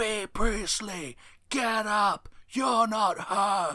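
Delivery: screaming, shrill, very high pitched and loud. Retelling a referee yelling at a downed wrestler: imitating Yellow Shoes screaming.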